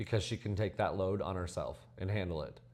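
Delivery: ordinary delivery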